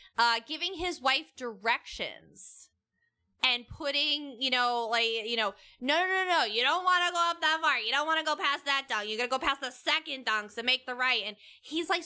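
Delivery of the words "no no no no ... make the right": mildly hollered mock outside voice. Retelling a man giving his wife directions on the phone: imitating a man screaming into phone.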